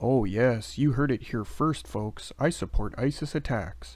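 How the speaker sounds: usual speaking voice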